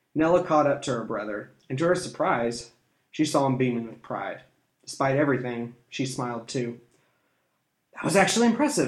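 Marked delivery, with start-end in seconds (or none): 8.0-8.9 breathless, quick, raised voice. Catching up to her beaming brother, a sister speaks, breathless. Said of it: "she said breathlessly".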